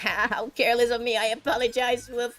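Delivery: goofy dog-like character voice. Voicing a girl told she imagined herself as a dog, goofy Tsuruko voice. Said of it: "I'm giving her the goofiest voice ever".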